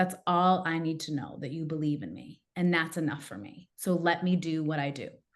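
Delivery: put-on tearful, crying speech. Speaker recounts what they told others during a disagreement, retelling own words while crying. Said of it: "And I'm like crying".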